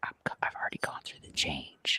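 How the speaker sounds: very hushed, very quiet whisper. Retelling a remark made to a friend's mom's best friend: imitating own whisper. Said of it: "I was whispering to her".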